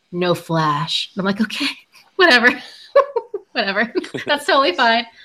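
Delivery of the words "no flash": acted, mock-serious voice. Retelling a man's reply to a photo request, imitating a really serious voice. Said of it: "in a really serious voice".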